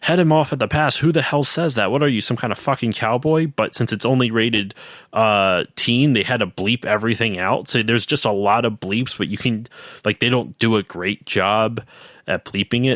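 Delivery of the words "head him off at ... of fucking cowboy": high-pitched, mild, screamed yell. Retelling a game scene where the guy in the car screams: imitating someone screaming. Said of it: "the guy who's in the car starts screaming at him".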